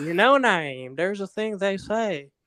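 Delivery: put-on slow, drawling Southern American accent. Quoting what a former supervisor always told him: imitated Southern American accent. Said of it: "she always used to tell me in her fine Southern accent".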